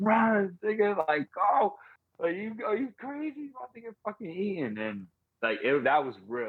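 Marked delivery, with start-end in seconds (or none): 0.0-4.8 put-on very high, shrill screaming. Retelling a movie scene where a woman screams at a man standing out there, retelling a scream. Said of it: "she started screaming like".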